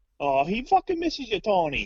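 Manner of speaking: bad Italian accent, very high-pitched and swooping. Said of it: "he said in a weird, shitty fucking Italian accent".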